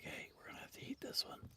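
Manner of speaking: breathy, hushed, very soft whisper. Retelling what they say on seeing wild animals: imitating own whispering. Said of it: "I start whispering".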